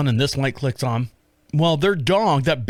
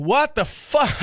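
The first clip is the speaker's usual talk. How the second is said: put-on, very high, loud hollering yell; 14 semitones higher than usual. Retelling yelling at a big dog chasing their chickens at night, retelling a yell. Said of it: "I'm yelling".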